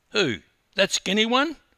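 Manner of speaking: very high, loud, incredulous, disbelieving voice. A husband questions his wife as she points out a record-breaker at customs; incredulous. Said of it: "asked Robert incredulously".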